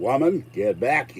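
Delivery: slightly rusty, commanding movie-star voice. Retelling how you called back a woman who kept disappearing in a wheelchair, in a John Wayne voice. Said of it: "In my best John Wayne voice".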